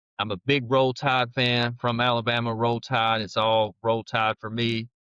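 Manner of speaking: ordinary talk, nothing marked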